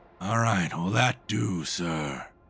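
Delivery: put-on elderly man voice. As you walk down a hallway toward bright lights, an old man speaks, old man's voice. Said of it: "you hear the old man's voice go".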